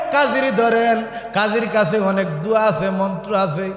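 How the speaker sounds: ordinary delivery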